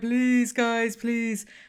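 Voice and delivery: fake crying and sobbing, high-pitched, pleading tone. Describing a man they watched for an hour, retelling his fake crying. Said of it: "fake crying".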